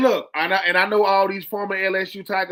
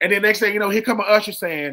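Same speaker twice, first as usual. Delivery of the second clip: ordinary delivery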